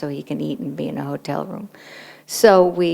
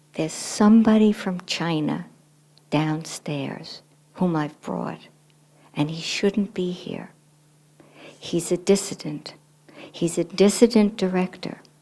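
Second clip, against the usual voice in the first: put-on whispering voice; 3 semitones higher than usual. Retelling what a colleague whispered in the office: imitating someone whispering. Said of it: "and she whispered".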